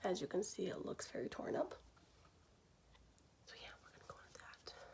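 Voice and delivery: soft, hushed whisper. Speaker showing a worn brush, unsure if anyone's home, whispering. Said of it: "I'm whispering".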